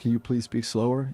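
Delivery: plain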